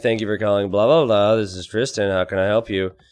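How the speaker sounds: put-on grumpy voice. Retelling answering a call-center phone early on a winter morning; imitating own grumpy tone. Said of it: "So I'm grumpy".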